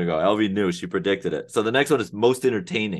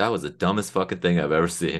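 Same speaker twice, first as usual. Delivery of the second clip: low-key, muttered aside to oneself; 2 semitones lower than usual. Imitating Whitaker coming over to comment: muttering under his breath. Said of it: "under his breath".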